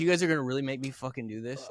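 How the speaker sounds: put-on angry voice. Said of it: "[name] was genuinely pissed".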